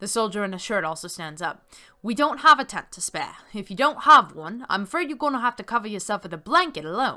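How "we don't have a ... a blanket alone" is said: put-on booming Irish accent, vaguely Cockney. Narrator voicing the soldier in a shirt who stands up, Irish, vaguely Cockney accent. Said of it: "I need to do the Irish, vaguely Cockney accent".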